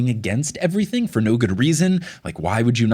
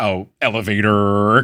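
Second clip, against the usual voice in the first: put-on American accent, R in "elevator" overdone; 2 semitones lower, 4 dB louder than usual. Mocking Tim's group-text message, Tim's American accent impression. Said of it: "he always goes really heavy on the R's when he does his American accent".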